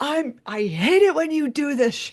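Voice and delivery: sudden, high-pitched yelling outburst. Retelling what a man yelled on pulling up to the house, imitating someone yelling. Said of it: "And he yelled".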